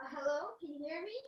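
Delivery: faint, distant voice. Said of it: "you sound very f-, faint".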